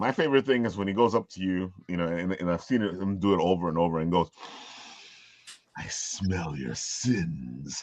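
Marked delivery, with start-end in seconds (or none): 5.8-7.8 hushed, soft, very slow, drawn out. Showing your favorite thing he does when he goes up to people, Father Evil voice. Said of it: "you can do Father Evil easily".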